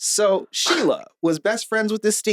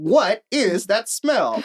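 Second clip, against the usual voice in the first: mock very slow, stiff, wooden scripted-sounding reading; 2 semitones higher than usual. Retelling what the ra said on entering the room: imitating reading off a cue card. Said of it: "as if she was reading off a cue card".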